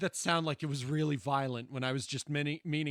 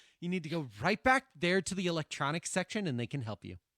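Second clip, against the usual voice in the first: play-acted blunt, tactless, dismissive brush-off tone; 3 semitones higher than usual. Retelling how the clerk sent the customer away: imitating a tactless clerk. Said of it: "the way she fucking said it".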